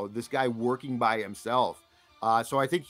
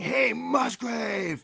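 put-on drunken screaming; 10 semitones higher than usual. Retelling how a drunk fan at a game was screaming at a coach: imitating a drunk fan screaming. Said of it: "just starts screaming".

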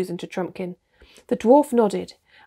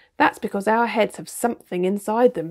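plain

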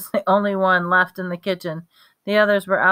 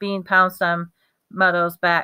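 ordinary delivery

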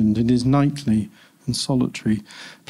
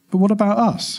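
slightly higher-pitched than normal; 9 semitones higher than usual. He asks her, the woman he'll spend his life with, in a slightly higher-pitched voice. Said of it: "he said in a slightly higher pitched voice than normal".

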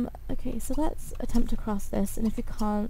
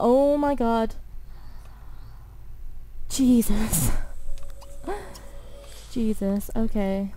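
badly shaken, very slow, drawn-out, relieved voice. A gamer reacts after their character nearly dies crossing a trap: scared, shaken. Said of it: "That scared me a bit".

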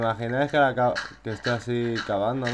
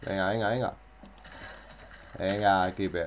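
usual speaking voice

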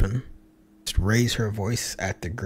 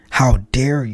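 mock scream, much higher; 3 semitones higher, 6 dB louder than usual. Retelling how a princess went up to a woman, retelling a scream. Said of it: "she went up to her and screamed".

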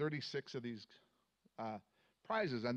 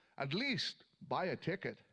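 grand, lofty, heavenly godlike proclaiming voice; 3 semitones higher than usual. Telling a joke at church, answering a pleading man in God's big booming voice. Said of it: "in a big booming voice".

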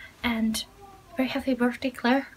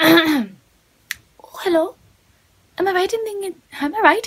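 put-on slight Scottish accent, hoarse, with brogue; 4 semitones higher, 5 dB louder than usual. Like someone testing out a silly accent for a greeting, throat scratchy, letting a little brogue sneak into a cheerful hello. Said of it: "why am I Scottish Luna".

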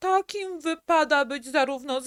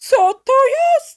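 very loud, shrill, high-pitched cry; 8 semitones higher, 10 dB louder than usual. The duck, after the small bird falls dead, cried out. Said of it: "Zawołała".

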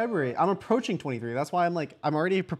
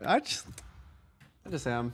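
giggly, soft, breathy, half-whispered, laughing through words; 3 semitones lower, 7 dB quieter than usual. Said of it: "Why are you laughing?".

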